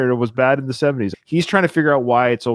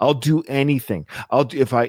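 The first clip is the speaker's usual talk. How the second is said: usual speaking voice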